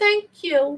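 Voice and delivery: tiny, high, little put-on voice. Retelling how an aunt thanked someone, imitating a little voice. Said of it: "they had those little voices".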